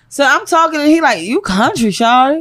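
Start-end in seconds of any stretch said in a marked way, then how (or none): 1.2-2.4 slow, drawn-out slow-motion drawl. Retelling what someone from Detroit said to them: imitating someone in slow motion. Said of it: "You said that in slow motion".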